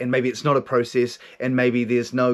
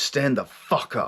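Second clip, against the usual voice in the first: mock, forceful, commanding delivery. Retelling a voice that came in and ordered him to stand, retelling a forceful command. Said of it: "it comes in with this force of energy".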